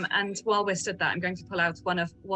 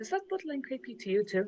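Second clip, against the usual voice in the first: very quiet, hushed, pitched-up sotto voce; 5 semitones higher, 4 dB quieter than usual. Aside to a companion while another asks Cassie about dresses, very quiet sotto voce. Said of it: "very quietly, like proper sotto voce".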